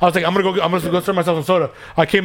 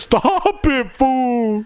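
frightened, scared, begging and pleading tone; 7 semitones higher than usual. Retelling how Ricky reacted to a scary movie, mock-scared Ricky impression. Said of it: "He was all scared".

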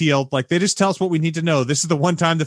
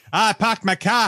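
put-on Boston accent, pitched up; 7 semitones higher than usual. Quoting his lines in the scene: boston accent. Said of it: "he gets his latest accent, which I believe is a Boston accent".

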